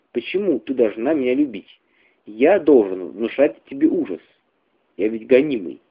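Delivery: ordinary delivery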